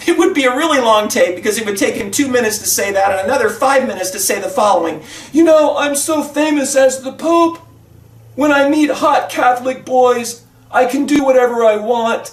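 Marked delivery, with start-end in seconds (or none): 5.3-12.3 slow, drawn-out put-on voice, every word dragged. Acting out a hypothetical Pope talking on a tape: Pope impression. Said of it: "same impersonation I did for the governor".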